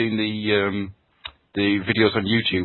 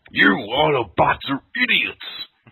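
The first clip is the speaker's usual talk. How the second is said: put-on gravelly wrestler voice, higher pitched; 6 semitones higher, 3 dB louder than usual. Retelling a game scene, imitating Megatron's bad Macho Man impression. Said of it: "He's a freaking bad Macho Man impression".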